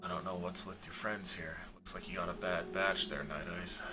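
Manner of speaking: whispered, in a character voice. Voicing a character leaning in to tell a player something privately: whispering in character. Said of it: "so this is a whisper, I assume".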